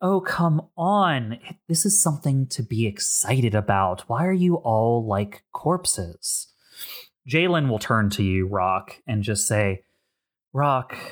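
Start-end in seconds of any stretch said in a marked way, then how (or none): 0.0-6.5 bright, merry, cheerful chirp. Voicing a character at a card game urging the quiet table: merry voice. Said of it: "as she's very merrily".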